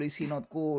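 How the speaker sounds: normal talking voice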